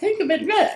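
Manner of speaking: very high falsetto voice throughout the line. Retelling how a director asked for a line like Pee Wee Herman: Pee Wee Herman voice. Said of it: "now can you say the line like Pee Wee Herman?".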